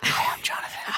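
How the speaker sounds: mock ASMR whisper. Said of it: "we're A S M R".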